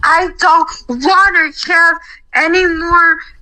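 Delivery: high, drawn-out, furious scream. Retelling how she banged her desk, imitating Heather screaming. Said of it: "She was screaming".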